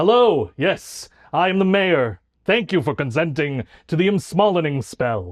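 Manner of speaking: stately, official-sounding small gnome character voice. Playing the mayor of the gnome city greeting visitors, in a deep gnome mayor voice. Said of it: "your voice is so deep down here".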